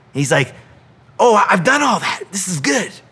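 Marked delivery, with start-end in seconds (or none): 1.2-2.9 excited voice. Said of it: "I picture him getting excited".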